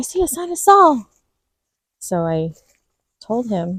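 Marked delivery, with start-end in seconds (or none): 0.0-1.1 yelled in a small, high squeak. A mother retells how her son yelled it, yelling in little Mickey Mouse voice. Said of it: "he would yell it in like this little Mickey Mouse voice".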